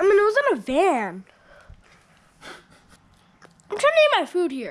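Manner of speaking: loud, sassy, full of attitude. Replying to the other speaker while trying to eat: sassy tone. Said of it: "sorry for being so sassy".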